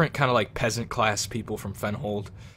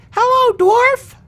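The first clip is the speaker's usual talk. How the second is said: put-on very high, loud little girl voice; 14 dB louder than usual. Narrator voices a little girl greeting the player's dwarf, little girl voice. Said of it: "she looks over to you and waves and say".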